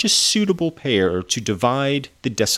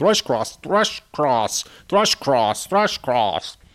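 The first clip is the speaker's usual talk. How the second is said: tongue twister said over and over; 3 semitones higher than usual. Trying a name as a tongue twister: saying it five times fast. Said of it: "Try saying Thrush Cross five times fast".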